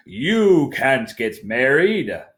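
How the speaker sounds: slow, spooky, frightening storyteller voice. Reading a story aloud to listeners, the narrator voices a character in a scary voice. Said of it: "said a scary voice".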